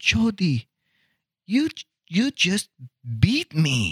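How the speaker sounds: imitated soft Korean accent. Recalling Philip, who had a soft accent: Philip impression, soft Korean accent. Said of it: "I'm doing an impression of somebody with an accent. ... the Korean, he had this real soft one".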